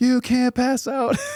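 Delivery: put-on screaming. Retelling lying injured on a mountain, imitating screaming at himself. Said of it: "screaming at myself on the mountain".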